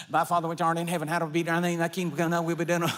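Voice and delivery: very fast mumbled rattle like an auctioneer. Showing how someone mumbles a prayer without feeling it, fast auctioneer-style mumbling. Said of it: "you sound like an auctioneer".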